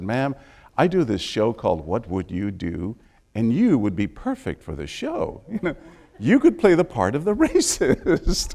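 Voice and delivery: hushed, soft, confidential, discreet half-whisper. Retelling leaning over to a woman's seat on a plane: retelling a half-whisper. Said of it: "but I whispered to her".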